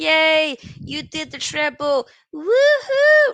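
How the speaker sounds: very drawn-out fake cheer, high and loud. Refusing to celebrate a rival team's treble: mock cheering. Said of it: "I can't sit there and be like".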